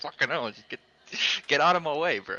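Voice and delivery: impatient, fed-up, agitated and exasperated delivery. Retelling own words while stuck behind a car during a lap: retelling own agitated words. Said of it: "I was getting a bit agitated".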